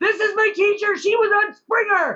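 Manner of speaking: put-on very high-pitched schoolkid shouting. Retelling kids at parent-teacher meetings, imitating kids yelling. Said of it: "kids kept yelling at their parents".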